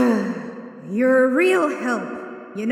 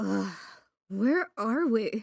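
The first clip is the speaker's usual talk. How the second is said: muttered, mumbled; 3 semitones lower, 8 dB quieter than usual. Narrator reading a character's line as she wakes, muttered. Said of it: "She muttered".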